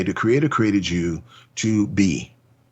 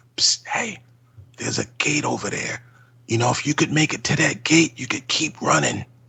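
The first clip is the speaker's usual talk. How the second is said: hushed whisper, much higher pitch; 6 semitones higher, 3 dB quieter than usual. Acting out how he nudges people one by one, whispering to them. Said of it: "I'm that guy whispering to people".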